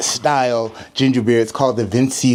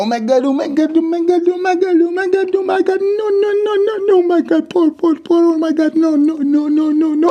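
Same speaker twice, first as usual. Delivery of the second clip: very high, shrill, frantic mock-panicked babble; 4 dB louder than usual. Joking about a pouring video, acting out the earlier pour: mock panic while pouring. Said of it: "I'm gonna write your name on the liquid as it pours and go".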